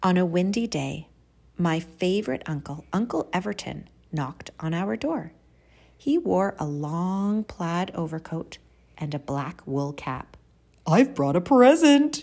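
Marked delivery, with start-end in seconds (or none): 10.9-12.2 very loud call, pitched up. Reading a story, an uncle knocks at the family's door; calling out. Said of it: "he called".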